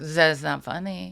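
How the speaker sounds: clumsy, put-on bad German accent. Recalling a moody German man, the speaker mimics him with a bad German accent. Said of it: "that was a bad accent".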